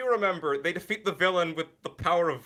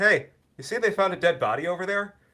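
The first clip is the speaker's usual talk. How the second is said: mock nonchalant, casual, offhand everyday small-talk inflection; 3 semitones higher than usual. Retelling a movie line about a dead body: imitating Vincent's casual tone. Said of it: "same inflection as if he just saw the towels were on sale".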